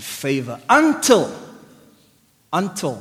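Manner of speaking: until stressed loud, repeated.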